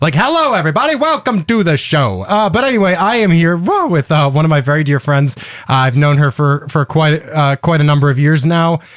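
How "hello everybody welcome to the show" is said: put-on old TV movie transatlantic accent, pitched up. Joking about sounding like old TV movie hosts: transatlantic accent like old TV movies. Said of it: "I start sounding like a transatlantic guy from old T V movies".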